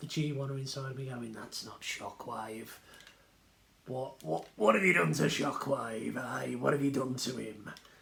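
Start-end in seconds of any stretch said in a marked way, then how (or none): 1.3-7.7 rough put-on cockney accent, slower. Speaker voices the G1 fan inside him, in a dirty cockney accent. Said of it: "Why am I talking like a dirty cockney?".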